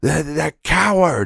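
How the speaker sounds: mock very high screaming shriek. Retelling reacting to a coworker being robbed: imitating own screaming.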